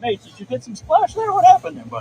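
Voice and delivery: very high, cartoony dog-talk voice. Talking to your dog after he shakes off like he got wet: dog-dad voice. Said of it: "you see how dog dads changed their voice".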